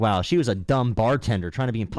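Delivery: ordinary delivery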